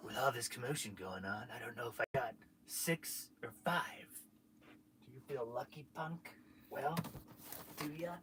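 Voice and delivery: very quiet murmur, barely above a hush. Quoting the famous line after being asked for the impression: Dirty Harry impression. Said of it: "what did Dirty, what did he say? He goes".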